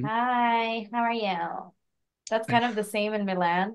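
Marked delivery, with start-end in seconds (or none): 0.0-1.7 put-on very slow Valley Girl voice, drawn-out hi. Comparing frivolous people in Milan to LA Valley Girls: Valley Girl voice. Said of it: "there's the Valley Girls, and they're like".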